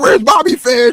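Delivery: put-on shrill, high, loud drunken hollering. Retelling a drunk fan sitting behind them: imitating a drunk fan yelling.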